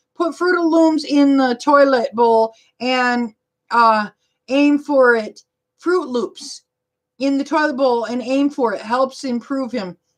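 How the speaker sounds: usual speaking voice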